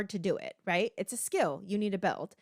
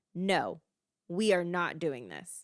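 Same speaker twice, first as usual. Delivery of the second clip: put-on stern, super serious tone; 2 semitones lower than usual. Speaker acts out a parent suddenly refusing a child, mock super serious refusal. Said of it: "you get like super serious about it".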